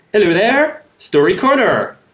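Somerset English accent. Host introducing the return of Story Corner on the show, random Somerset accent. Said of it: "with my random Somerset accent".

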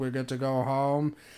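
put-on mumbled speech. Retelling a scene from The Office, imitating Stanley mumbling. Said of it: "you just hear Stanley mumble".

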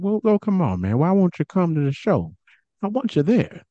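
gentle, soft voice, pitched slightly high. Telling a story, the speaker quotes Terry Funk urging Dennis Stamp: Terry Funk soft-spoken voice. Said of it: "Terry Funk got like this soft-spoken voice".

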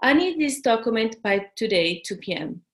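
flat, level tone with falling close at end. Demonstrating the recommended tone for a request: flat tone, closed at the end. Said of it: "tone of voice that goes like flat and then you close it".

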